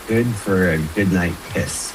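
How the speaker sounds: ordinary talk, nothing marked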